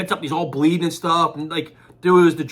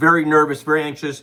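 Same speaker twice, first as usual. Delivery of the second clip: usual speaking voice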